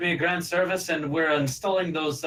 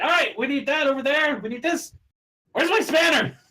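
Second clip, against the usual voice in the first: shrill, very high, loud screaming; 11 semitones higher, 4 dB louder than usual. Voicing a goblin shopkeeper yelling inside her stall: screaming goblin NPC. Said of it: "just screaming".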